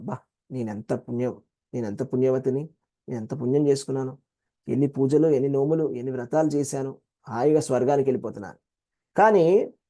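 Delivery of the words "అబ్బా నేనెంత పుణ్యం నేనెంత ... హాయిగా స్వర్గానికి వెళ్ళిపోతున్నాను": ordinary talk, nothing marked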